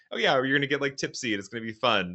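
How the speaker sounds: mock pleasant, light voice. Retelling how a girl offers a drugged shot: imitating a nice-sounding tone. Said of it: "saying it in such a way that it kinda sounds nice".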